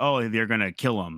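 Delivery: normal talking voice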